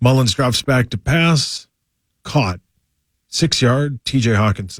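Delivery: flat, monotone commentary voice. Imitating how a game was called: Chris Rose monotone. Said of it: "it was so monotone. It would be like uh".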